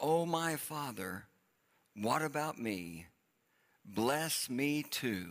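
slow, drawn-out begging plea.

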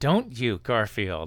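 through clenched teeth. Describing a cartoon scene, speaker voices a character's words through clenched teeth. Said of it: "which I said through clenched teeth".

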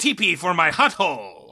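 drawn-out, swooping cartoon character voice. Giving a clean read of a line in a Wario voice. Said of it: "it was about forty percent more Wario".

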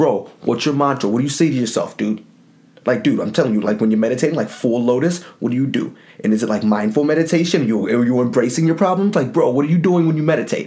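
put-on, dumb-sounding New Jersey bro accent. Quizzing someone about their meditation mantra: put-on New Jersey accent. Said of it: "I don't have, like, that stupid New Jersey accent".

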